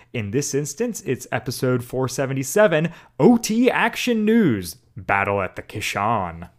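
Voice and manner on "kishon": Kishon said with stress on the second syllable, shon. Podcast intro announcing the episode title, stress on shon in Kishon. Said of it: "Put all the emphasis on the Sean part".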